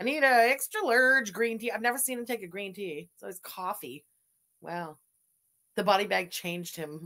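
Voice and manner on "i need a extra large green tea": exaggerated Canadian accent, laid on thick on large. Trying to get a man's voice down the way he orders: exaggerated canadian accent impression. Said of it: "I'm trying to get his voice down the way he says extra large. It's that like extra Canadian way of saying it".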